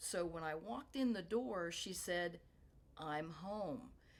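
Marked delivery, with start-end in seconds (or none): 3.0-3.9 toneless, flat, level monotone. Retelling what she said when the speaker walked in the door, very monotone. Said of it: "And just very monotone".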